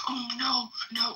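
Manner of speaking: acted, very high, hushed, soft whimpering. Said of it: "just whimpering".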